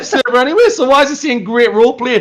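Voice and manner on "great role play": ordinary delivery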